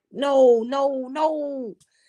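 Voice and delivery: play-acted very slow, stretched-out, high screaming. Retelling watching a video, imitating her own screaming at the phone. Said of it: "That's how I was screaming at the phone".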